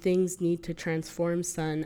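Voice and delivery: plain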